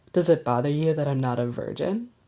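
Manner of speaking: ordinary talk, nothing marked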